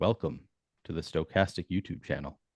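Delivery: very slow ASMR voice. Saying the channel welcome line when asked to: very slow ASMR voice. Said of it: "Can you say it very slowly?".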